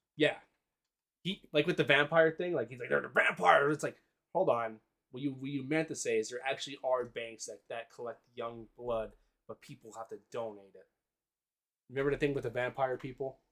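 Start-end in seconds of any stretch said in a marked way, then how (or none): 2.9-3.8 loud, unhinged bellowing like a wild ranter. Retelling how Alex Jones talks about vampires: imitating Alex Jones' insane delivery. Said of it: "He just says it in an insane way".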